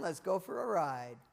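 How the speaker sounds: usual speaking voice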